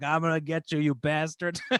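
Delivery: put-on drunken, taunting voice. Recounting drunkenly screaming at a stranger all night, the speaker imitates drunken taunting. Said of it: "drunkenly pointing at him like".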